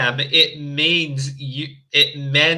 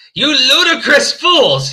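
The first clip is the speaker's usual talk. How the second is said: furious, angry, very high-pitched yell; 10 semitones higher, 7 dB louder than usual. Reading a story aloud, a character scolding the students: shouting angrily. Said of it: "he shouted".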